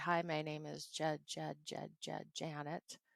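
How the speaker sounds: voluntary first-syllable repetition. Demonstrating voluntary stuttering while introducing oneself, a voluntary stutter on the first syllable. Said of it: "voluntary stuttering... I'm repeating that first syllable".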